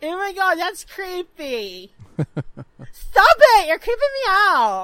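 swooping, fake girly young schoolgirl voice. Acting out girls reacting to a high school guy looking, imitating a girl's voice. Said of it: "if I did the whole episode like that".

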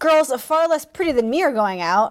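ordinary delivery

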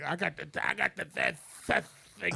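rough, worn, high, creaky rasping voice. Imitating an old former heroin user coming into a hospital: post-heroin voice. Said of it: "the post-heroin voice".

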